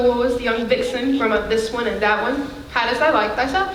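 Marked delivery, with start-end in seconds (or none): 2.7-3.8 pitch rising at the end.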